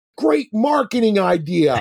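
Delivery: high, loud, yelled call-out. Retelling guests calling over from across the room: imitating a group yelling. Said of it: "just yell over at me".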